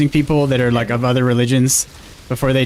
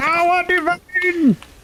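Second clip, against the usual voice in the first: put-on scream of a little mage, much higher. Speaker mimics his little mage guy, imitating a screaming mage. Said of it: "little mage guy screaming".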